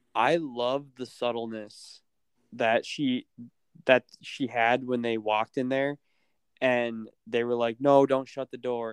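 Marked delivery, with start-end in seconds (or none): 7.8-8.9 mock screaming. Describing a scene from a show, retelling people screaming. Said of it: "they were all like screaming".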